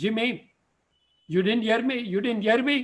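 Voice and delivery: mock loud calling-out shout. Telling a story, voicing his mom calling out to jimmy: imitating mom shouting. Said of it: "so she shouts".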